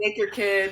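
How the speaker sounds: put-on yelling. Retelling going on stage limping after a win: imitating own past yelling. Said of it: "yelling things for my friend Rachel".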